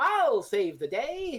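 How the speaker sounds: slow, grand, heroic delivery. Describing a secondary character stepping in: imitating a heroic declaration. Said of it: "the one to heroically go".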